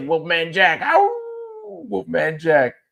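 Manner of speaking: raspy, high voice with big swoops. Imitating a seventies radio personality: raspy Wolfman Jack voice. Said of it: "that raspy voice like this".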